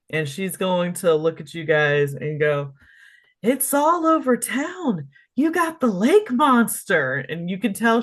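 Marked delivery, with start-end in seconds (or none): 3.4-7.1 very high, tipsy shout over background noise. A narrator voices a barmaid telling the group the town news, shouting over the noise. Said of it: "she's shouting this over over everything".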